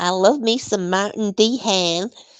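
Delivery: terrible, very bad put-on American accent. Recalling a catchphrase while chatting, said in the worst American accent ever. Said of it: "That's the worst American accent ever".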